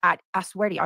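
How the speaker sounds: ordinary talk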